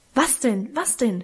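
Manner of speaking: ordinary delivery, nothing marked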